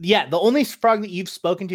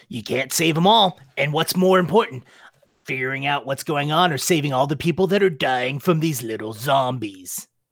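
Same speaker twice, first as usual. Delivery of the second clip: throat-straining put-on character voice, lower pitch; 4 semitones lower than usual. In a tabletop game, a character challenges another character's choices, throat-straining character voice. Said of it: "[name]'s voice is really rough on my throat".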